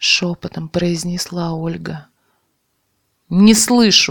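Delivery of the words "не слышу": loud, outright, raised yell. Narrator reads the young man's line after Olga's whispered reply; yelled again. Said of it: "снова заорал тот".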